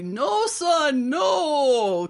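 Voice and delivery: loud, swooping, very high, desperate pleading voice. Retelling a father's last call to his son: imitating a desperate plea. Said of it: "one final plea".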